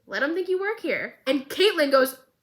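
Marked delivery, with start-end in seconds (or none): 0.1-1.1 casual, totally unbothered delivery, slightly raised pitch. Retelling a scene where Vi answers Caitlyn: imitating a nonchalant Vi. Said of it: "Vi so nonchalant goes".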